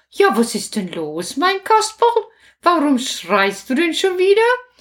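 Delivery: puppet-show grandmother character voice. Voicing the grandmother answering Kasperl's call in a puppet play: grandmother character voice. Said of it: "Großmutter, Großmutter, komm doch mal".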